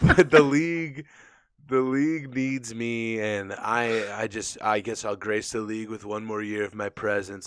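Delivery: holding back laughter, stifled, held in. Talking about the league while trying not to laugh at a comment, holding back a laugh. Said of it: "I'm trying not to laugh".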